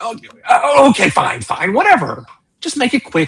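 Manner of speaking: slightly flustered, caving-in tone in a high voice. Narrator voicing a guard thrown by an authoritative presentation: slightly thrown-off guard. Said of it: "He's he's thrown off a little bit".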